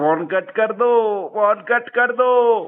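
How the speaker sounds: slow, drawn-out, mocking imitation.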